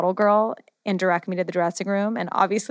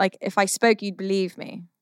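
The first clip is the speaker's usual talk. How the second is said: put-on British accent. Showing off an accent to the other speaker, in a put-on british accent. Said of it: "I have not a bad British accent".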